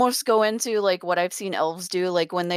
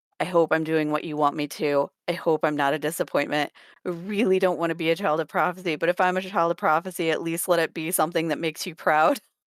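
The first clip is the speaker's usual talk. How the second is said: ordinary talk, nothing marked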